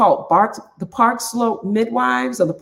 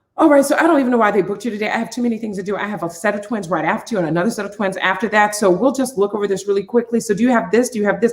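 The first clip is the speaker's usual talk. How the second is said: hurried, rattled-off, dismissive rushed talk. Retelling how a woman at the office rushed him through, imitating someone talking fast. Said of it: "Like literally talking fast to her".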